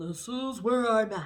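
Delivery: very loud, very slow, drawn-out booming regal voice. Giving an Aries reading, the speaker imagines an emperor's reaction: emperor impression. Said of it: "That's my impression of an emperor".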